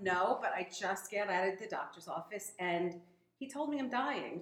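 ordinary talk

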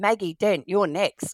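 loud, big, stern calling voice. Retelling how her playmate in a game of doctor called her next: imitating a big stern voice. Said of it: "in a big stern voice called out".

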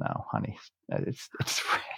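soft, hushed, unvoiced whisper. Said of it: "I'm like".

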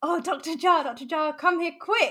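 play-acted, very slow, loud urgent shout. Speaker retells a cleaner calling for the doctor, imitating someone shouting. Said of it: "she just shouts out".

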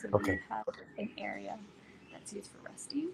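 soft, low, hushed, breathy near-whisper. Showing a resting area that is in use right now, in a low voice. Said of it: "I'm going to have a low voice".

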